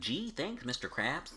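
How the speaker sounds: slow, drawn-out, stretched cartoon character voice. Joking about a scary cartoon movie, doing a SpongeBob voice. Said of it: "SpongeBob be like".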